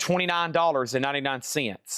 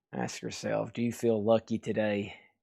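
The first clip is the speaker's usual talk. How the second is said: put-on gritted-teeth voice, lower and quieter; 4 semitones lower, 5 dB quieter than usual. An autograph seller talking about Clint quotes him, through gritted teeth. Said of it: "like he's gritting his teeth the whole time".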